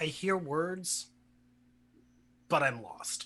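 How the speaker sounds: very quiet, hushed whisper. Answering Ruthia about what the others are saying, whispering very quietly. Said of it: "whispering very quietly".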